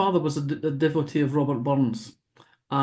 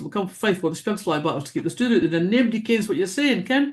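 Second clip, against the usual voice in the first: quick, rattled-off native Scottish accent; 4 semitones higher than usual. The speaker shows how they talked on arriving at Oxford: awfully fast Scottish talk. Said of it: "we talk awfully fast".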